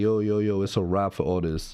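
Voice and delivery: ordinary talk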